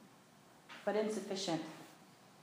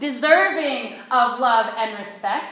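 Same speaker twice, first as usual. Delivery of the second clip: louder, more heartfelt delivery. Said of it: "say it again with a little more feeling".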